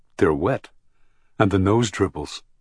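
ordinary delivery, nothing marked

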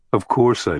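ordinary delivery

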